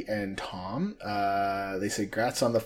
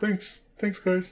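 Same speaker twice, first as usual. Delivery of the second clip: very high, silly, weird put-on voice; 9 semitones higher than usual. Thanking listeners for congratulations on episode 50, weird silly voice. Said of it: "In my weird voice".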